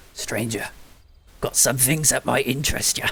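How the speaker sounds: hushed, coaxing, enticing whisper. Voicing a cloaked merchant whispering to a player: whispering merchant character. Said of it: "whispers to you".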